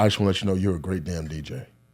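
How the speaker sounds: hushed, soft half-whisper spoken close. Recounting what a man half-whispered in their ear, the speaker quotes him: retelling a half-whisper. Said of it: "he whispers in my ear".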